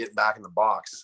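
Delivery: ordinary talk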